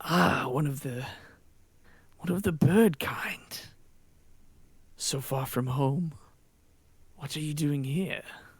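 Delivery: calm, clear, unraised voice. Quoting what a character says to the group, talking quietly. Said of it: "It's almost like talking quietly so that you focus and you pay attention".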